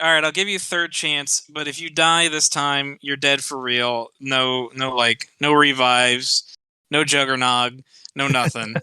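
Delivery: ordinary talk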